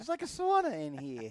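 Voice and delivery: very loud, high, blaring New York accent. Redoing your own remark for the other speaker, Joey Buttafuoco New York voice. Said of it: "that that was my New York, my New York voice".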